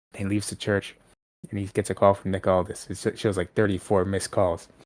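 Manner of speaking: usual speaking voice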